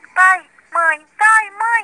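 loud, high, frantic, desperate shouting. A boy flees in desperation to his parents' bedroom, shouting.

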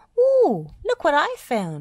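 thrilled, excited, high, loud squeaky exclamation. Narrating a story, Dizzy spots an old football and squeaks excitedly. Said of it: "she squeaked excitedly".

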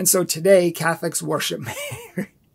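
can't keep straight face, breaking into laughter mid-sentence. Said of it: "I can't even say it with a straight face".

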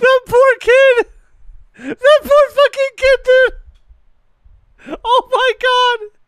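laughing hysterically. Gaming streamer right after getting a kill, laughing hysterically. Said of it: "I'm gonna pass out from laughing!".

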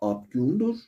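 abgûndur said with a questioning tune. Explaining questions by intonation in Azeri Turkish, question intonation on abgûndur. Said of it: "doğru tonlama şu".

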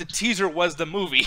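normal talking voice

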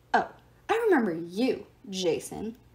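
grudging, low, grumbled delivery. Reading a story aloud, a character recognizes a visitor and grumbles. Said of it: "Terminus grumbled".

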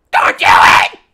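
screaming. Urging someone on a live stream not to do it: screaming. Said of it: "You don't have to scream".

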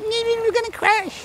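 tiny, squeaky, very high chipmunk voice. Showing how a small inner voice might sound, in a little chipmunk voice. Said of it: "It's like a little chipmunk going".

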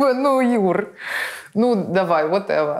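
words spoken through laughter. Answering the interviewer's question about vanity, laughing while speaking. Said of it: "(смеясь)".

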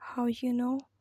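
ordinary delivery, nothing marked

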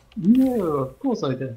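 heavily sarcastic, tongue-in-cheek delivery. Complaining that someone took the linking book: sarcastic. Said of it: "that was all sarcastic".

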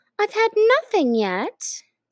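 offended, affronted tone. Alice replies to the March Hare in an offended tone. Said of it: "Alice replied in an offended tone".

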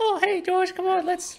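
very high, squeaky cartoon bird voice. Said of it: "Originally, Petey's voice sounded like".

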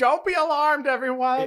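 blaring robotic scream, very high and very loud. Retelling a card's story about a robot shouting at wildlife: imitating a robot screaming. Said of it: "He's just screaming".

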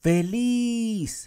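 feliz stressed on last syllable. Spanish lesson on where the written accent goes: stress on last syllable of feliz. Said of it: "Se escucha más al final".

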